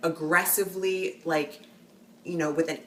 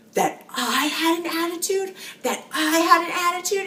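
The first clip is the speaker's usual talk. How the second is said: mock furious screaming, much higher pitch; 3 semitones higher, 9 dB louder than usual. Telling a story about a customer exchange where he lashed out, acting out his angry reaction, retelling a furious scream. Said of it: "He starts screaming".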